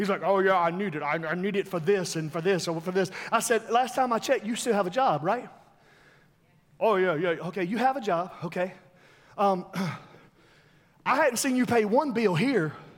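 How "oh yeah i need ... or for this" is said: put-on, very deep voice, dropped low. Speaker retells an exchange with a man who pays no bills, imitating a real deep voice. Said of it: "If you ever heard his voice, he's real, real deep".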